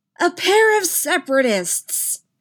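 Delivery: very high, loud, shrill screeching voice. The narrator reads Palpatine's line to Rey and Finn, screeching. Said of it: "Palpatine screeched".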